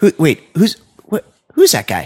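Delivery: high, baffled, puzzled tone.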